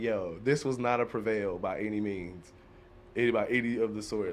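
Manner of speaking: plain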